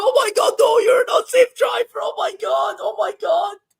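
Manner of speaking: very high-pitched, loud, terrified, panicked cry. Retelling how passengers react to fast driving: imitating a panicked passenger. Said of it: "And then it'll be like".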